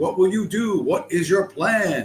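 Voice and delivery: put-on loud, high, slow, over-clear shouting. Retelling people asking obvious questions into a microphone: imitating people shouting.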